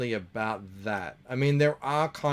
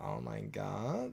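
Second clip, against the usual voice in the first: crackling, creaky vocal fry voice; 10 dB quieter than usual. Showing how the accent sounds with vocal fry: vocal fry. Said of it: "we don't get much of the vocal fry".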